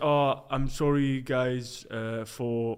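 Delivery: put-on very slow, drawn-out Belgian French accent. Imitating a footballer's apology: Lukaku impression, deep Belgian French voice. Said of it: "he's got a really deep voice".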